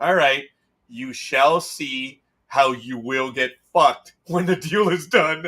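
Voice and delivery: jokingly threatening, mock-menacing tone. Retelling the reply to people who brushed off a point about contract wording, mock-threatening. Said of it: "I'm only kidding".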